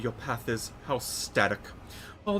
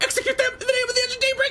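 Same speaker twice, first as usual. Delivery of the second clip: put-on thrilling, brittle childlike voice, much higher, louder; 7 dB louder than usual. Narrating a woman's line, in a thrilling, brittle innocent-child voice. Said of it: "voice becomes thrilling and brittle like that of an innocent child".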